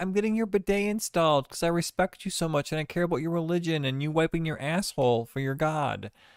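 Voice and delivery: mock sweet, keen-to-please, happy, eager voice. Imitating a woman who is getting a bidet installed: imitating her sounding happy. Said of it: "She's so happy".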